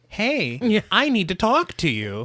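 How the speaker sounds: put-on nice, gentle, calm, kind voice, slow. Imitating a creepy street guy talking to the protagonist: imitating a kind, calm voice. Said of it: "his voice is so kind to her".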